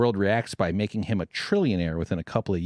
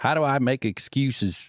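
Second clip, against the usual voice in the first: fake Southern accent in a higher pitch; 5 semitones higher than usual. Imitating another person making excuses, in a put-on Southern accent. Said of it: "Why am I giving such a Southern accent?".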